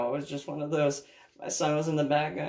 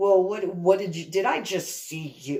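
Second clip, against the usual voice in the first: put-on disgusted tone, higher; 3 semitones higher than usual. Retelling what an ex-boyfriend said in the car: imitating disgusted tone. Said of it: "he said it very, like, with disgust".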